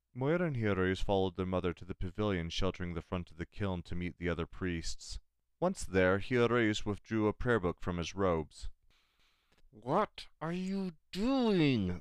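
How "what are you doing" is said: very high, very slow, through clenched teeth. Moira questions Hiroyus as he pulls out a prayer book, through clenched teeth. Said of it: "Moira asked through clenched teeth".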